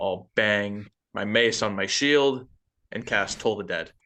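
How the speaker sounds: plain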